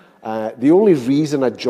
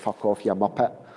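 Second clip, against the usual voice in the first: put-on Scottish Glasgow accent, quieter; 3 semitones lower, 5 dB quieter than usual. Telling of teaching English in Finland one summer, Glasgow accent. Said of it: "in a Scottish accent, a Glasgow accent".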